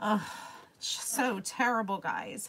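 sorrowful, sad voice on the edge of crying. Talking about ordering a memorial piece for a lost dog: sad, close to tears. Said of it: "now it's making me super sad".

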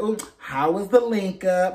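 little sassy, cheeky, teasing tone with attitude. Quoting how he asked about the link up, mock-sassy teasing tone. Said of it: "he said it with this little sassy attitude, like".

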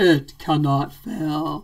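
deep, grand fantasy-epic voice, pronounced. Trying the line again to do it better, Lord of the Rings voice. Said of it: "Let me do it better".

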